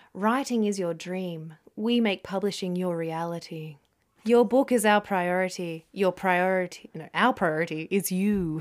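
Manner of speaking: deliberately creepy, mock reading voice. Speaker reading a company's website text aloud to another speaker: put-on creepy reading. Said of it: "It's super creepy".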